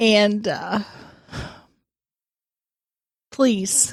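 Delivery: tearful, crying while talking. Addressing the listeners with a plea, crying while talking. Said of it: "you are actually crying right now".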